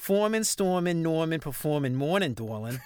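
New Orleans style Yat accent. Showing the other speaker how to say the words: New Orleans Yat accent. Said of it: "You got to say Dorlin at the end".

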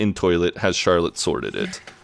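ordinary talk

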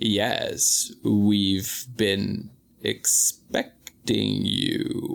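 very slow, creepy, haunted-hotel bellhop drawl. Describing how a game character talks, in a creepy bellhop voice. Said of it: "talks like the creepy bellhop at a haunted hotel".

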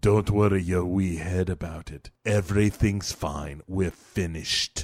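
mock deep, hushed, very low, soft threatening tone. Retelling a story, the speaker quotes a man's reply to a worried question, retelling a menacing line. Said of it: "Why are you saying it all menacing like that?".

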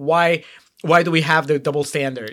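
ordinary talk

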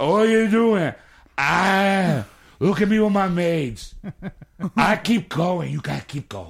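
put-on loud, high drunken Austrian accent, drawn-out "ah". Telling a story where Schwarzenegger walks in: drunk Schwarzenegger Austrian accent. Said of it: "You sound like drunk Schwarzenegger".

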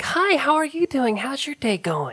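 put-on very high-pitched kid-talk voice. Imitating how Maggie talks to Alf's kids, in Maggie voice. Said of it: "she'll bring it up and like".

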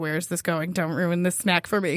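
play-acted guarded, distrustful, suspicious and wary tone. Retelling own reply in a dating-site chat: imitating own suspicious reply. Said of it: "suspicious [name]'s like".

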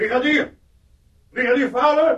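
shrill, very high shouting. An officer calls out for the sergeant, shouting. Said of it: "Je hoeft niet zo te schreeuwen".

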